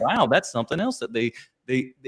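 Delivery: ordinary delivery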